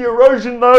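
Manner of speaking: high, loud, mock fussy whining.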